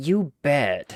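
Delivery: angsty, with all the feeling drained out. Answering a call for the best Cloud impression: Cloud impression. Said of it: "who's got the best Cloud impression for that?".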